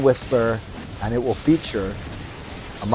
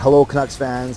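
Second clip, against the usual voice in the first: normal talking voice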